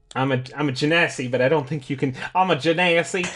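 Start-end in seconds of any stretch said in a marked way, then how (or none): 2.3-3.2 put-on Southern accent. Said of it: "a Southern accent on this podcast".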